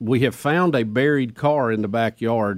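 ordinary delivery

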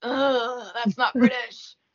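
unimpressed, disapproving, dismissive judging tone. Retelling the dialect coach's reaction on set: imitating a disapproving dialect coach. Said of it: "looking at me like".

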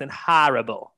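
Northeast American accent on horrible. Joking about a football player's size: put-on Northeast accent. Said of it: "in my best Northeast accent".

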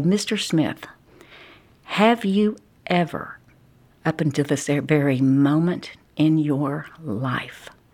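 slow, drawn-out, suspenseful delivery with pauses. Retelling how a lawyer questioned a witness on the stand: imitating suspenseful courtroom questioning, with pauses. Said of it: "a suspenseful way that he would".

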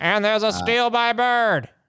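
high, live play-by-play announcer voice. Imitating a famous basketball clip: impression of a famous steal call. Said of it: "I think that was a pretty good impression".

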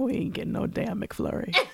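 low muttering under the breath, as an aside. Retelling what a man standing next to the speaker said, muttered under his breath. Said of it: "And then under his breath".

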